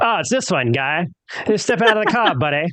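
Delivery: high, badly done, cartoonish Canadian accent. Joking about crossing the border, imitating the Mounties; South Park Canadian accent. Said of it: "Sounds nothing like a Canadian accent".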